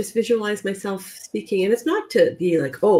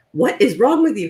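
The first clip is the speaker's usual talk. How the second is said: mock-angry outburst, put-on, higher-pitched and louder; 3 dB louder than usual. Speaker retells a woman's sister snapping at her at the door, mock-angry outburst. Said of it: "Like very angrily".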